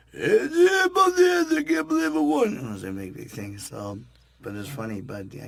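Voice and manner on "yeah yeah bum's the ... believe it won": very loud, high, shrill, booming movie-hero voice. Retelling a Wheel of Fortune bit on stage: Sylvester Stallone as Rocky Balboa impression. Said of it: "I do Stallone go as Balboa".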